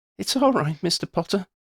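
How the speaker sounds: trembling, shaky, very high-pitched voice. A girl answers the man flying the headstone, in a shaky voice. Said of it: "Shona said in a shaky voice".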